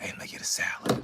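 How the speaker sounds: very soft whisper, up close. Imitating a stranger who comes up close and whispers, retold whisper. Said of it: "he just whispers".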